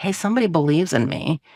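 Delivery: normal talking voice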